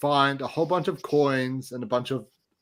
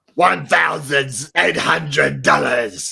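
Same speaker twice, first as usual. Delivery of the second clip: put-on Scottish accent, loud and very slow; 7 dB louder than usual. Redoing a line about counting money: put-on scottish accent. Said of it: "your Scottish accent actually improved".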